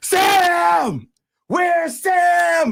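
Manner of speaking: top-of-the-lungs loud, high shout, name drawn out. Recounting being startled in your chair, retelling a yell at top of lungs. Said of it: "someone yelling at the top of their lungs".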